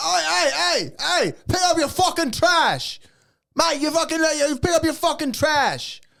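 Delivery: put-on, very high, furious angry yelling in British accent. Retelling how British people react to roadside trash: imitating angry British people. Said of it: "And they get so fucking angry".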